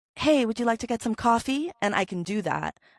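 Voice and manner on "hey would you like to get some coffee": voice nudged feminine, slightly higher pitch. Voicing a woman's line while telling a story, slightly higher pitch. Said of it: "I kind of high pitch it a little bit when I talk about the women".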